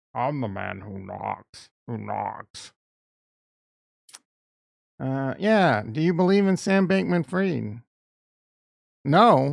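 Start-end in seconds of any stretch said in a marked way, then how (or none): 0.1-2.7 put-on Scottish film star voice, lower pitch. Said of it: "My Sean Connery impression is good".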